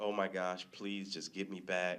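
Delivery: put-on tearful, crying voice. Retelling being stranded on a stalled jet ski: retelling a tearful plea. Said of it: "I'm crying at this point".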